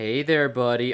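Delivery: condescending, talking-down manner. Voicing Talbot greeting a panicked man thought to be slow: talking down. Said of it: "obviously thinking the guy's slow".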